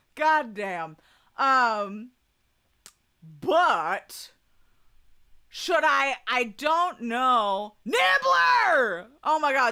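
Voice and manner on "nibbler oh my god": shrill, very high, thrilled excited shout. Spotting a familiar name while ranking bald men, excited yell. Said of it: "I didn't mean to yell at you".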